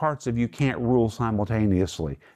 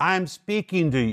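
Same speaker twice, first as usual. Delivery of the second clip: play-acted, raised, slow, scolding voice; 7 semitones higher than usual. Acting out speaking to a child who keeps talking: acting out a raised voice. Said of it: "You have to raise your voice".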